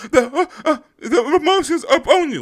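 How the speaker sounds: put-on very high, loud, weepy, dramatic crying outburst. Mocking a girl who reads her emotional speech off a piece of paper, do a mock-emotional speech reading. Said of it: "reading off a damn piece of paper with emotion".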